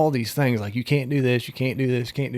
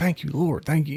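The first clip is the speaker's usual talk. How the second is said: acted-out tearful breaking-down voice; 2 semitones higher than usual. Retelling thanking the Lord after seeing a passed test: retelling own tearful thanks. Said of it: "I started breaking down".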